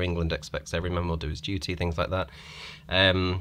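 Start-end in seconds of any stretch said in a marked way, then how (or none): none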